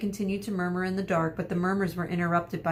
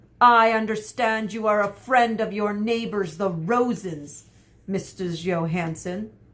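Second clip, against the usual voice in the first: angry, hostile, raised soldier-like voice; 2 semitones higher, 5 dB louder than usual. A soldier questioning Missus Johansson about her neighbors, angrily. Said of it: "the soldier said angrily".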